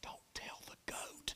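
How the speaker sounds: slow, hushed, secretive whisper. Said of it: ""Why are you whispering?"".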